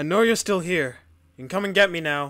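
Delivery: loud, high calling out.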